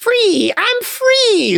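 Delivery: shrill, very high, drawn-out squealing shriek. Narrator reading an escaped rat breaking free in a story, screaming. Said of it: "screamed the escaped rat".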